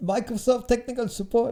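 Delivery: failed attempt at Nigerian accent. Speaker mimicking a tech support caller, attempting a nigerian accent. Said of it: "Nigerian accent again".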